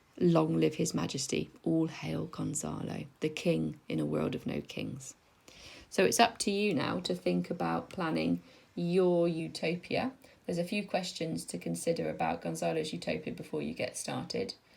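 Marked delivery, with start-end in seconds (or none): none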